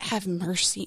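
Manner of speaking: acted desperate, pleading delivery. Retelling own words after terrible news: reenacting begging God for mercy. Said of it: "begging God".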